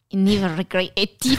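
put-on botched New Zealand accent that sounds Scottish. Repeating a line while trying a New Zealand accent, bad Scottish-sounding accent. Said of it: "Fuck you, Ewan McGregor".

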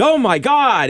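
sudden, very high, startled shriek. Acting out the wife's reaction to the speaker's toenails, imitating a scream. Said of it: "she screamed".

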